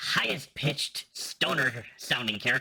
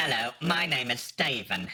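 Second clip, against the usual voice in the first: put-on British English accent. Asked on the spot to do an english accent: english accent. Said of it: "do an English accent".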